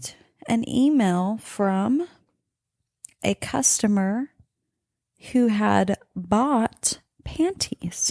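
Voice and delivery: talking slowly, unhurried pace. Scrolling to find a customer email to read aloud, talking slowly. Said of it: "I'm talking slow trying to find it".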